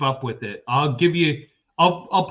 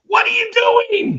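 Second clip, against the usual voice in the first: high-pitched, loud yell. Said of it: "he was just yelling".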